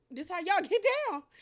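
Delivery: high, loud, amazed, incredulous voice.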